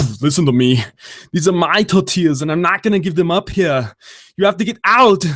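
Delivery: put-on voice, belted out loud and high. Doing an impression for viewers: Arnold Schwarzenegger voice. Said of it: "Arnold Schwarzenegger".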